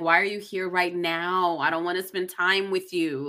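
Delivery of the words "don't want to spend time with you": normal talking voice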